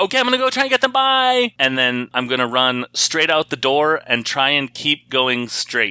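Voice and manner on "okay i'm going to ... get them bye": very high, shouted yell. Planning to run straight out the door, yelling over the shoulder. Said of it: "I'll yell over my shoulder".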